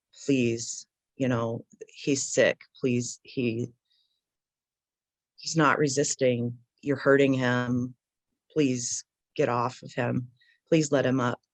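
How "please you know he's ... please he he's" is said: plain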